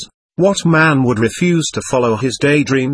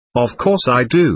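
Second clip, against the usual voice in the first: ordinary delivery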